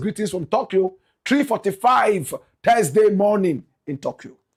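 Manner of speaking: plain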